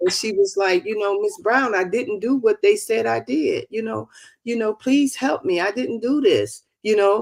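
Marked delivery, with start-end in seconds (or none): 1.2-6.6 imitated crying, tearful pleading. Retelling a young mother's plea for help: imitating a crying plea. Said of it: "she kept crying and saying".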